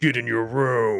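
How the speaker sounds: loud, stern, strict parental-sounding voice. Retelling what he tells his wife: put-on deep voice. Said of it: "when I go into my deep voice".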